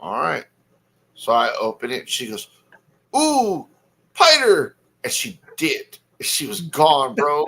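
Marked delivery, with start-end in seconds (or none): 3.2-4.8 put-on very high, loud tiny girl toddler voice. Retelling showing his daughter a tarantula, a dad imitates her: imitating a toddler. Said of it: "my three-year-old".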